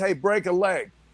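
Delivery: normal talking voice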